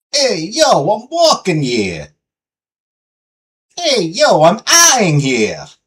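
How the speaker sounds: put-on, sing-song Italian American accent. Riffing on the name Tony, doing an Italian American accent. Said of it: "thinking of an Italian American accent".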